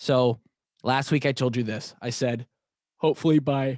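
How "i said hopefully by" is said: words spoken through a yawn. Podcast host recapping last week's plans for listeners, yawning. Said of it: "and I'm yawning".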